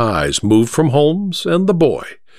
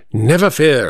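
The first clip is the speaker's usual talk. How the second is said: ordinary delivery, nothing marked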